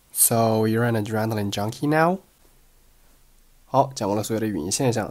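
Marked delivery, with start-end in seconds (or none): 0.1-2.1 rising pitch on the final word now. Going over the sound features of an English sentence, rising pitch on final now. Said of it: "最后一个单词now 语调上扬".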